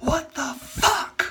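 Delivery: high, slow, drawn-out yell.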